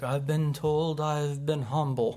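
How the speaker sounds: put-on slow, dragged-out old man voice. Retelling a man's answer when asked about the greatest praise he got: old man voice. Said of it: "he's like got this old man voice".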